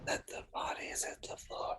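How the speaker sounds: whispering. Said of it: "whispering to himself".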